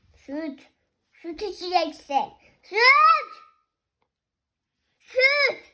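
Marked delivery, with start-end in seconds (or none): 2.6-5.5 high, loud shout. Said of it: "Bağırma anneciğim".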